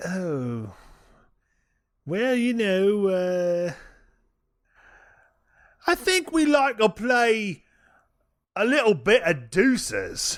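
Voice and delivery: put-on Cockney accent throughout. Told to answer a quiz question in a Cockney accent, the speaker answers. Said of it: "you have to answer this in a Cockney accent".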